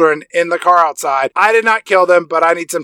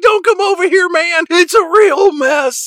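very high, called-out shout; 11 semitones higher than usual. Retelling a scene where Shaggy calls back to Grace: imitating Shaggy shouting. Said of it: "he shouts back at Grace".

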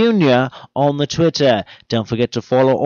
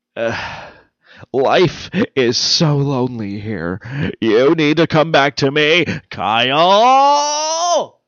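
put-on campy TV hero voice. Opening a short episode of the show: Adam West voice. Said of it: "Maybe I should just do it as Adam West".

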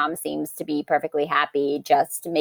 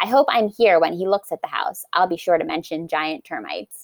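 ordinary talk, nothing marked

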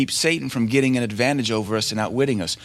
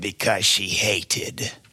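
low, growling demon voice; 4 semitones lower than usual. Retelling what a demon said through a girl: imitating a growling demon voice. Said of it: "And the demon's voice said".

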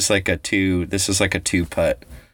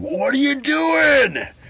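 mock roaring, much higher. Retelling roaring at a little kid who handed back their ball, retelling a roar. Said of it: "I like roared like".

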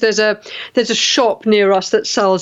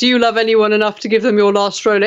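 usual speaking voice

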